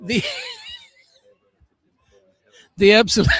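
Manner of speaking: talking through laughter. Trying to thank a co-host at the end of a show: laughing while talking. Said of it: "it's a little problem when you can't stop laughing".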